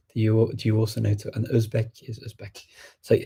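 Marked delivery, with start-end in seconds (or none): none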